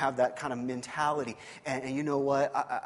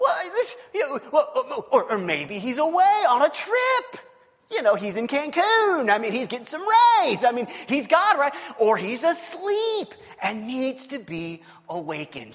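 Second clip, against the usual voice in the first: mocking, taunting, swooping teasing tone; 11 semitones higher, 10 dB louder than usual. Acting out Elijah teasing the crowd about their god: imitating Elijah making fun of them. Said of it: "He's making fun of them. He's teasing them".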